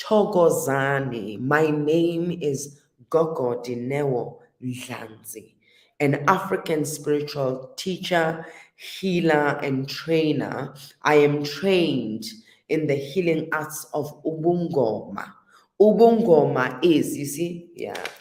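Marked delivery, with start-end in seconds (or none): 0.0-15.3 slow, measured, carefully articulated, eloquent delivery. Retelling how she introduced herself at a TED talk: slow articulate delivery. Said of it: "I needed to say".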